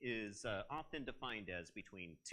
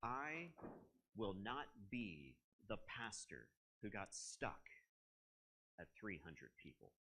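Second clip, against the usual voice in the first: mocking, scornful tone dripping with disdain; 3 semitones lower, 5 dB quieter than usual. Retelling the lead pastor yelling at the speaker's dad: imitating disdainful tone. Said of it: "he said it with such disdain".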